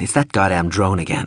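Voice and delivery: plain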